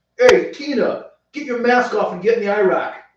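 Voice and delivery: put-on New Jersey accent. Joking about New Jersey dropping mask mandates, speaker does a New Jersey accent. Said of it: "That's a total Jersey thing".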